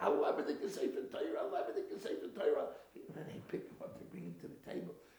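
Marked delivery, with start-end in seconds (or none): 0.0-2.7 high, loud, scolding scream. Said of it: "He starts screaming at the innkeeper".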